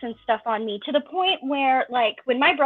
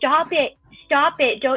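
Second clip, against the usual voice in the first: deliberate, slow, drawn-out screaming; 2 semitones higher than usual. Retelling screaming at mom while crying: imitating screaming at mom. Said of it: "I was literally screaming at my mom".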